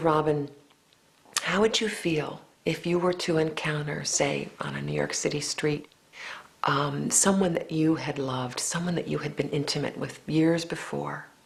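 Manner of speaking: mock whispering. Retelling how the director spoke into the ear: imitating someone whispering. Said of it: "he whispered to me".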